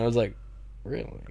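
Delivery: ordinary talk, nothing marked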